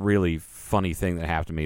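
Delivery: ordinary talk, nothing marked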